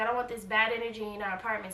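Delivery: normal talking voice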